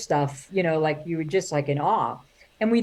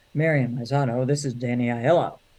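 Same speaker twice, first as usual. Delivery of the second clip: deep, sultry voice; 5 semitones lower than usual. Retelling a phone call from Danny Aiello: Danny Aiello's sexy voice. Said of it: "It was a very sexy voice".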